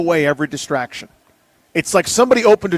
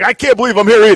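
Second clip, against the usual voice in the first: loud, pitched-up, over-the-top bro voice; 5 semitones higher, 7 dB louder than usual. Doing an over-the-top dude voice for J J Watt. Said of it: "it's kinda like an over-the-top dude, bro".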